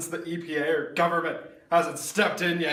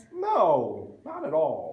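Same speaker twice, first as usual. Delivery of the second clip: dripping with sarcasm, swooping intonation. Answering whether anyone was let drink the toxic water: sarcastic. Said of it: "Sensing some sarcasm".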